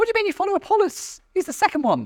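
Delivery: high, fast, indignant, mocking, squabbling voice.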